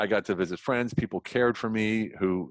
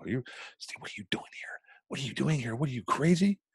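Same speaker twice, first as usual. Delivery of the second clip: put-on embarrassed, disbelieving woman's voice, higher; 4 semitones higher, 4 dB quieter than usual. Retelling a woman's reaction on finding him working as a doorman: imitating an embarrassed woman. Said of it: "she was embarrassed to see me there".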